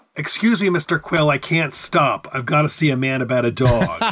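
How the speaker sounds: ordinary delivery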